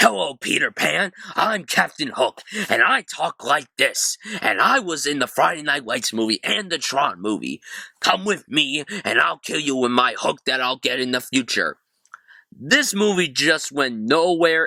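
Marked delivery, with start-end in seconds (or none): 0.0-11.8 words pushed out through clenched teeth. Mocking an actor's Captain Hook delivery: Garrett Hedlund talking through teeth. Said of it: "Garrett Hedlund talking with his teeth like this".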